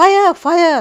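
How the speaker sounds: high, loud alarmed shout.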